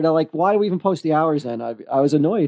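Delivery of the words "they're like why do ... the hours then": plain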